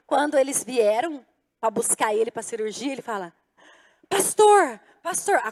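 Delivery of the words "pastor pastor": frantic, desperate, raised urgent calling voice. Retelling a man woken before surgery calling for his pastor, imitating desperate calling. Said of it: "acordou ele assim, desesperadamente".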